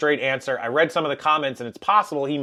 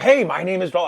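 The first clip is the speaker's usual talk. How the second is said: put-on eager young salesman voice, higher pitch; 3 semitones higher, 3 dB louder than usual. Retelling a cell phone store employee's greeting: imitating Paul the salesman. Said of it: "Guy's like".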